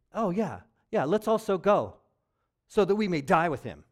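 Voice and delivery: very loud, mocking, swooping sarcastic tone. Retelling a disciple's words from a Bible story: mock-sarcastic quote. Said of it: "he's getting sarcastic".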